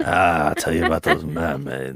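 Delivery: put-on grizzled old man voice. In character, telling people about mermaids: old grizzled [name] voice. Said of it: "Old grizzled [name]".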